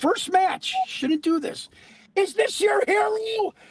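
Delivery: very high, high-pitched yelling shout. Recalling yelling to the crowd during a first match: retelling own yell at crowd. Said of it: "I yelled to the crowd".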